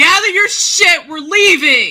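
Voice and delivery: loud, urgent screaming. Voicing an annoyed character gathering the group to leave: screaming in character. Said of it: "I scream loud enough".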